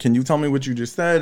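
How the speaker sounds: ordinary delivery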